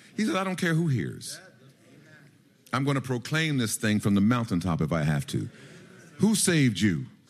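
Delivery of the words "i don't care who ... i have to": ordinary delivery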